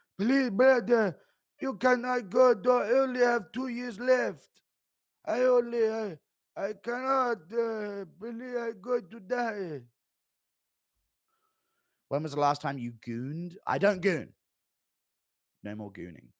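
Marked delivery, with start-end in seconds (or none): 0.2-9.8 very high, shrill, slow pleading. Announcing an impression of Zombie Merab begging Matt Serra, in begging Zombie Merab impression. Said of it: "Impression of Zombie Marab begging".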